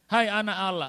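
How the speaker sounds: loud, high-pitched outcry by men.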